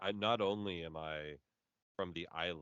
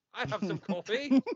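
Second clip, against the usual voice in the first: fake, bad Turkish accent, very high and very loud; 10 dB louder than usual. Joking about how people from Turkey sound: bad put-on Turkish accent. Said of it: "you're still British".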